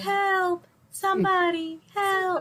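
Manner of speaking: limp, fake, half-hearted, unconvincing call. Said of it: "Tabitha's screaming for help was not convincing".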